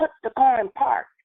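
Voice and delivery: mock hollering, way up high. Retelling telling a driver to put the car in park: retelling hollering at her. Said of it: "I'm hollering at her".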